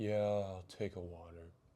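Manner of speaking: mock, spaced-out, dazed, barely-there voice. Retelling a friend's reply after he passed out: imitating someone sounding out of it. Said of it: "he just sounds so out of it".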